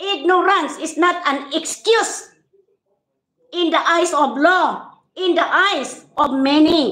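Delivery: rising irritated voice. Speaker calling out ignorant people, raised voice, annoyed. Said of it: "tataas talaga boses ko".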